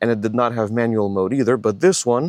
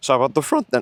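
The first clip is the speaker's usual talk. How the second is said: voice breaks and cracks on a word; 2 semitones higher than usual. Showing a car's rear seat room and moving on to the front, voice cracking. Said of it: "that was a good voice crack".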